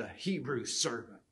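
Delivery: spoken with open, audible disgust. Reading a verse aloud, imagining how she said it: mock-disgusted. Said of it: "I can imagine how she said it, the Hebrew servant, with disgust in her voice".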